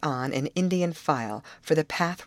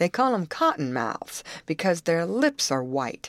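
ordinary delivery

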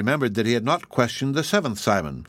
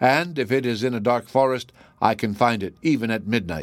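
ordinary delivery, nothing marked

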